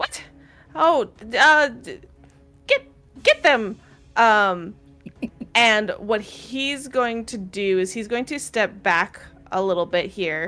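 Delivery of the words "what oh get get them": high-pitched, loud, irritating voice. Narrating a fight, the speaker voices Hrupo on his turn: Hrupo's slightly annoying voice. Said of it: "with the slightly more annoying voice goes".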